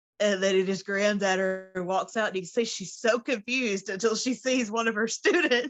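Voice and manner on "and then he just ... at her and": plain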